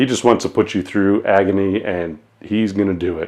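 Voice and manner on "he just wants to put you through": ordinary delivery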